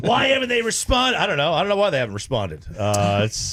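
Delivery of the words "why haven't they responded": put-on, acted angry voice. Reading a friend's text aloud in his voice: imitating Sean in an angry voice. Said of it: "All of his texts are read in an angry voice".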